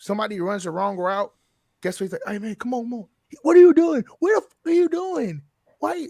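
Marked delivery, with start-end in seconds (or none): 2.3-6.1 very high, rising yell. Imitating a quarterback yelling after a wrong route: imitating Derek Carr yelling. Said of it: "you're yelling at Chris Olave".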